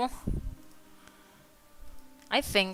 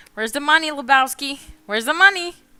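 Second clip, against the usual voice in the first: high-pitched, loud, demanding shout. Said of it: "I never watched that movie".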